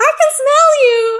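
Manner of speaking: put-on very high, slow, squeaky little girl voice. Showing how Wolverine sounds in their head when asked: little girl voice. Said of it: "Wolverine has a little girl voice in my head".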